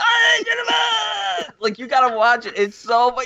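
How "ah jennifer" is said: wild, very high ape-like shouting yell. Retelling a scene where David sees Craig approach Jennifer: imitating David's King Kong yell. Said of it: "he starts banging".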